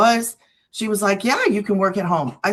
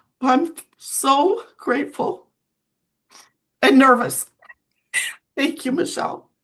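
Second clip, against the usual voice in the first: high, tearful, crying through the words; 5 semitones higher than usual. Speaker thanking Michelle after apologizing for crying, crying while talking. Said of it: "So I'm sorry for crying".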